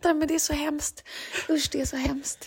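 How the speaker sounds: talking while laughing through the words. Reacting to another speaker's joke about a holiday heart attack, laughing while talking. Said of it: "jag skrattar".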